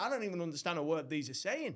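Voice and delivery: plain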